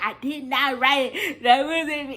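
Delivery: acted crying voice. Retelling how she denied writing it when accused, retelling her past crying. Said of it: "now I'm crying and lying".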